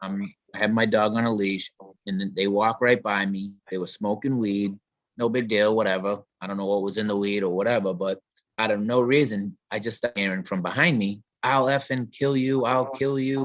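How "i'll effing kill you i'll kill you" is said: acted-out menacing, threatening half-shout, mildly yelled. Retelling a man yelling threats from behind on the street: imitating a man screaming threats. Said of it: "the guy in back up the street screaming at me".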